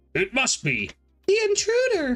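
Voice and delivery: put-on anime girl voice. Reading a manga page aloud: Nami voice. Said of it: "That's my Nami voice".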